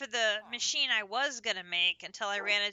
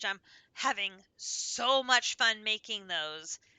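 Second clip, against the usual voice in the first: heavily sarcastic, dripping sarcasm. Complaining about making more redstone flux cells: dripping sarcasm. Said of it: "Can you hear the sarcasm dripping from my mouth?".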